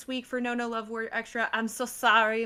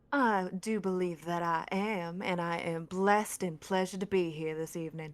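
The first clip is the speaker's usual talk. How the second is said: low, put-on Southern belle accent; 4 semitones lower than usual. Answering another speaker's question during a group bit, in a southern belle voice. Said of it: "into a Southern Belle?".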